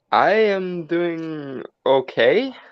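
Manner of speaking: hesitant, uncertain, unsure, slow delivery. Answering how they are doing tonight: sounding unsure. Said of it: "why do you sound unsure?".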